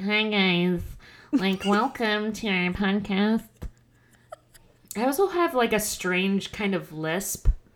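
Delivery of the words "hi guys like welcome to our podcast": heavily nasal, slow, drawn-out, exaggerated voice. Showing how their own voice sounds on recordings: imitating own nasal voice. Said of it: "I feel like I'm very nasally".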